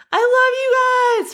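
very high, loud acted cheer, love stretched long. Retelling cheering for the team from the corner: imitating own past shout. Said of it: "I remember I was shouting".

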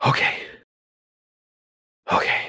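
hushed whisper, spoken under the breath. Narrator reads their own words after closing a door behind them, whispered. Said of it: "I whispered".

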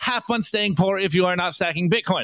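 plain

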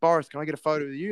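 very hopeful, small pleading tone. Retelling asking someone for a photo: imitating own hopeful asking. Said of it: "just so hopeful".

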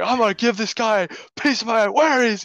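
mock, very high, furious yelling and screaming. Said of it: "screaming about how he's".

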